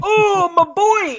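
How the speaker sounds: acted exaggerated weeping bellow. Retelling a film scene where a father bellows over his son: imitating a bellowing, weeping father. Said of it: "bellows like the guy from the Legend of Zelda cartoon".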